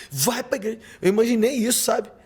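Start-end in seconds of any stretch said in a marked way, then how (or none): 0.1-0.8 put-on angry voice, higher and quieter. Imagining what his late mother would say, imitating an angry mother scolding. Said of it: "Eu imaginei ela com a cara brava, falando assim".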